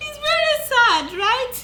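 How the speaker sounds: high, loud laughing while talking through giggles.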